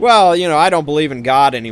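somewhat loud, carrying voice.

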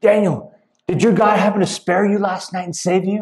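acted worried, nervous, anxious high-pitched calling out. Retelling a bible story, voicing the king calling out next morning, acting out an anxious voice. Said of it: "rushes with an anxious voice".

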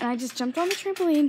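out of breath, winded, breathless. Vlogging right after jumping on the trampoline, out of breath. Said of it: "and I'm out of breath".

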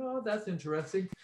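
blasé, offhand, unimpressed tone. Retelling someone's reaction to a thing shown to him: imitating a blasé tone. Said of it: "so blasé about it".

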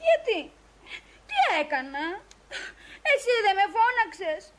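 tearful, sobbing, crying voice. A girl asks the man who called her why, as he begs her not to cry: crying. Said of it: "μην κλαις".

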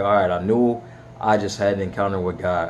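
ordinary talk

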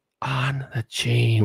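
weird, creepy, hushed stage whisper murmur. Imitating how Biden does his creepy half-whispering thing: Biden creepy half-whisper. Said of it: "where he does that weird whispering thing".

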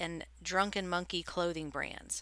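ordinary delivery

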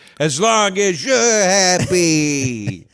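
very slow, half-hearted, dragged-out drawl, barely trying. Answering the other speaker's praise in a half-assed Tony Soprano impression. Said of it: "my, uh, Tony Soprano half-assed impression".

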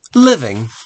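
ordinary delivery

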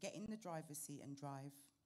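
ordinary delivery

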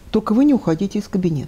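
ordinary talk

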